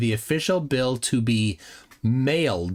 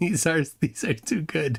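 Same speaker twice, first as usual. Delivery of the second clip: laughing while talking, much higher pitch; 6 semitones higher than usual. After apologizing for being unable to stop laughing, laughing while talking. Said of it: "I just can't stop laughing".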